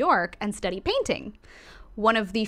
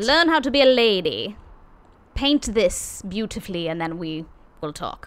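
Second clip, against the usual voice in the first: put-on British accent, loud. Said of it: "Why are we British?".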